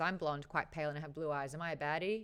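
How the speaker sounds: ordinary delivery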